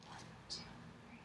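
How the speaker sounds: whispered voice. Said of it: "I'm going to whisper something on this side".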